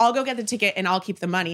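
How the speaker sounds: ordinary delivery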